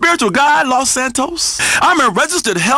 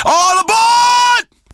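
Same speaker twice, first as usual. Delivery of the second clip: high, slow, drawn-out yell. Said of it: "somebody gonna yell out".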